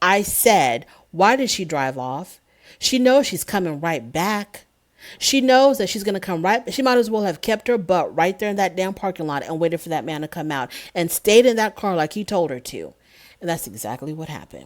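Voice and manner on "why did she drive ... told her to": ordinary talk, nothing marked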